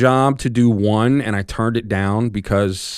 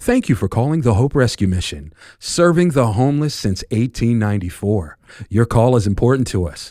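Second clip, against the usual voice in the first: voice with an audible smile. Demonstrating an on-hold phone message for a rescue mission, smiling while speaking. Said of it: "So you notice how I'm smiling?".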